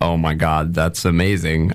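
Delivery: ordinary delivery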